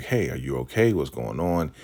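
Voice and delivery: plain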